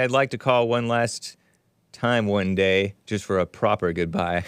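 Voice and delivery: ordinary talk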